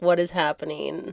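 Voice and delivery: acted-out fearful, scared voice. Acting out the young princes watching executions: imitating scared princes. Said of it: "they would have been scared".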